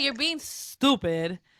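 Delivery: exasperated, annoyed scolding tone. Imagining Angie refusing to be filmed: imitating Angie. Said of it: "she's like".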